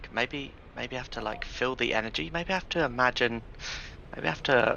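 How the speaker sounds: soft, private muttering, thinking aloud. Speaker showing how he talks to himself while learning this, mumbling to himself. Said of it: "mumbling to myself".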